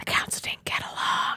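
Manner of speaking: hushed whisper. Voicing a character who leans in to tell a secret: whispering. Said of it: "He leans and whispers to you".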